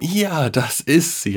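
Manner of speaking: excited calling out, high-pitched and slow. Narrator voices a boy finding the street he searched for, calling out. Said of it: "rief er".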